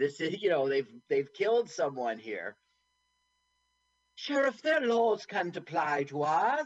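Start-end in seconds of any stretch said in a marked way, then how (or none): 4.1-6.7 high, put-on Southern North Carolina accent. Retelling a movie scene, the speaker voices Maureen: Maureen's voice, North Carolina accent. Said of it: "is that your North Carolina accent?".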